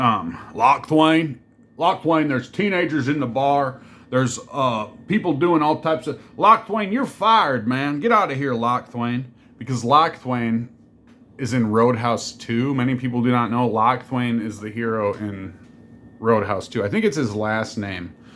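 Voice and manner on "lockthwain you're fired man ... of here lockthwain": put-on Southern American accent. Joking about firing lockthwain from the bar, in a southern accent. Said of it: "I just like to say Lockthwain in a southern accent".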